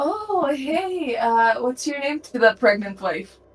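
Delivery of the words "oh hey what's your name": sugary, sweet, innocent, friendly voice. Voicing a character greeting a pregnant wife: sweet innocent friendly voice. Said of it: "I'm gonna pull out the, like, the, the sweetest, most amazing smile".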